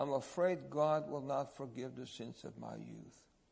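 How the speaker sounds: mock sorrowful, grieving, mournful, swooping lament. Recounting a dying man's answer about why he was crying, quoting him mournfully. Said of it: "he mournfully said".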